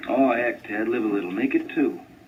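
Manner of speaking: small, little inner voice. Acting out the little voice in the back of the head: little voice in back of head. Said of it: "a little voice in the back of my head".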